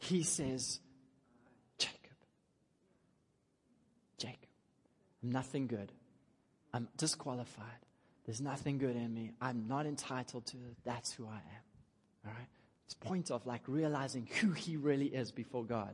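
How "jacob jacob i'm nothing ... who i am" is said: acted-out whisper. Explaining a hebrew bible passage, acting out a man's answer, retelling a whisper. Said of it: "in a whisper".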